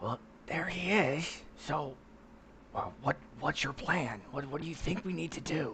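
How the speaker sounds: hushed whisper. Speaking in character to a companion nearby: whispering in character. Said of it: "whisper to him".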